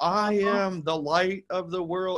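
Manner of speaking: put-on sweet, cute six-year-old child voice. Speaker quotes a young boy's recorded affirmation, imitating a 6-year-old's voice. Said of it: "it's in like 6-year-old voice".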